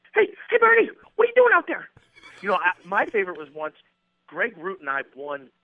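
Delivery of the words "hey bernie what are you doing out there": put-on voice, much higher, faster, louder. Asked for one more, mimic him calling out to Bernie: fast high-pitched impression. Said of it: "give me one more".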